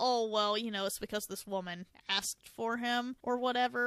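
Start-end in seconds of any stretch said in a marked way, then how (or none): none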